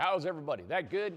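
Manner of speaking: speaking up to the room. The co-host urges him to speak loud, so he greets everybody: speaking loud. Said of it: "I am going to speak loud".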